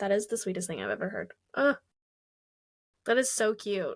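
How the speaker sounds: emotional, near tears, teary. Listener reacting to a guest's story about a voice recording; tearing up. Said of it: "I'm actually tearing up".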